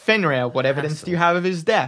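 ordinary talk, nothing marked

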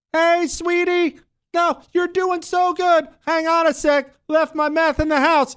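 very high, slow, sweet cooing mock dad voice.

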